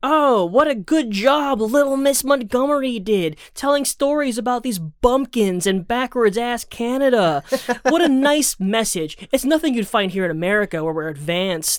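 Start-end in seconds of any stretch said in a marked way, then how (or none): 0.0-9.2 slow, high, patronizing, condescending drawl. The speaker mocks how an unfortunate quote was delivered; mock-condescending tone. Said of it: "saturated with a lot of condescension".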